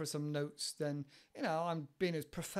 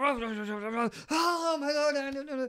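put-on, high, very loud, excited burst of enthusiasm; 9 semitones higher, 8 dB louder than usual. Acting out how a passionate man exclaims when he talks, imitating his energy and enthusiasm. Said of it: "you can hear the energy and enthusiasm".

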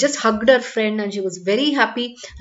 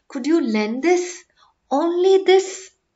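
hesitant, anxious, high-pitched, halting; 6 semitones higher than usual. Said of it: "asked in a hesitating voice, full of anxiety".

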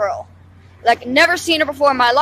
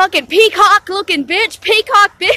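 put-on, high-pitched screamed outburst; 6 semitones higher than usual. Retelling how a woman kept yelling at them in front of police, imitating someone screaming. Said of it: "just screaming at me".

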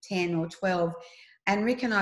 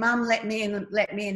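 ordinary talk, nothing marked

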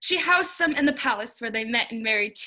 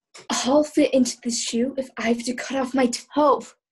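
muttered, quiet. Narrator reads the older stepsister forcing the shoe on, muttering to herself. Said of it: "she muttered to herself".

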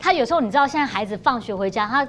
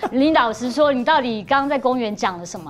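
ordinary delivery

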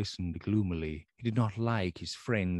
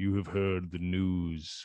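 ordinary delivery

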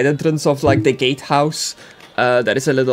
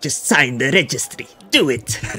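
dark, sinister sci-fi emperor voice. Voicing a robed magister who asks the players to sign: Emperor Palpatine voice. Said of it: "you didn't give him an Emperor Palpatine voice".

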